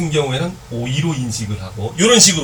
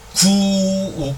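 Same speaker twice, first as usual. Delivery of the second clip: slow, stretched-out, pitched-up 구욱; 7 semitones higher than usual. Pronouncing a word slowly to show an inserted vowel, slowly drawn-out 구욱. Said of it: "천천히 발음을 해보면".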